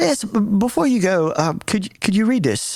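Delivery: terrible mock English accent. Retelling what a man with an english accent asked the speaker: bad english accent. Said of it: "my English accent's terrible, but I'm gonna give it to you".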